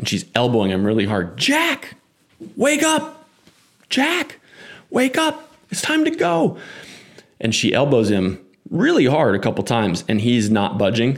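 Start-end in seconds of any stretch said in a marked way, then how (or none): 1.4-6.6 mock very high, insistent, drawn-out shout. Retelling a girlfriend yelling at her passed-out drunk boyfriend: imitating a girlfriend yelling. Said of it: "she's yelling at him".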